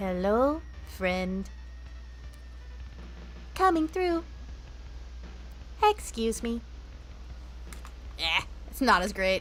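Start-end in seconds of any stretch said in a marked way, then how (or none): 0.0-6.6 whispered, soft, breathy little turret voice. Showing impressions with a dry mouth, doing the turrets: turret voice. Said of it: "But then the turrets, you would typically do".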